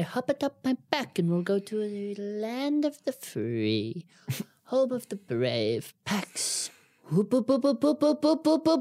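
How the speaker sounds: playful, hammed-up character voice, slow, swooping up and down. Joking about a mighty Pegasus flying a friend to a convention: playful Pegasus voice. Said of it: "we'll call upon a mighty Pegasus".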